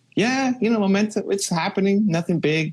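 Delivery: high-pitched, mock-casual, mocking impression voice.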